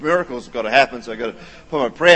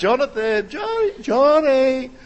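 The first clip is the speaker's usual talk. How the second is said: put-on, acted calling out; 13 semitones higher than usual. Speaker retelling calling for a child hiding during hide and seek: calling out. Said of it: "I'm calling out".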